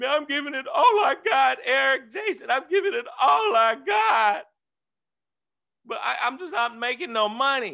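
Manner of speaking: mock loud boo-hooing cry with complaining tone. Talking to his audience about downlines who complain to him, mock crying. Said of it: "They be boo-hooing like".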